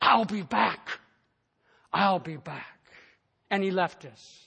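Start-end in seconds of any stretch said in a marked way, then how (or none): 0.0-2.7 devilish, menacing, hissed-out evil voice. Narrating a story, voicing Satan as he leaves, hissing. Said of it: "His voice now hissed".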